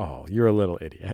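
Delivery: nice, sweet, low voice. Speaker acts out what they say while petting Sissy: put-on sweet voice. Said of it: "I'll say in a sweet voice".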